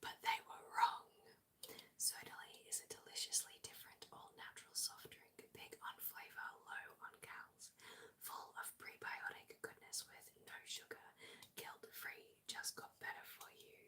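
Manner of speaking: soft, steady whispered ad-read delivery. Speaker reviewing a soft drink after their voice has gone, whispering. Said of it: "I'm gonna switch to whispering now".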